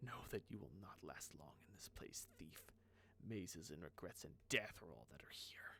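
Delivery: low, menacing, threatening hiss. A scarred figure speaks to the thief approaching him, hissing. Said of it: "he hisses as you approach".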